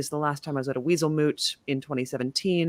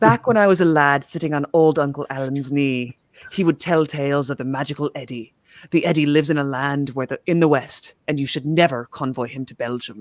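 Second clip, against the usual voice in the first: loud attempted Scottish accent drifting into Irish; 6 dB louder than usual. Reading out a statement someone sent in, the host does John Jameson, attempted Scottish accent. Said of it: "Got a little more Irish than Scottish".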